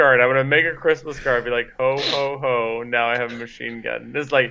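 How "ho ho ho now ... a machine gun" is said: put-on German accent, slow, each word drawn out. Imagining a Christmas card line, read in Alan Rickman German voice. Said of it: "read in Alan Rickman German voice".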